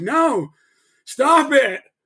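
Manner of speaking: yelling, pleading.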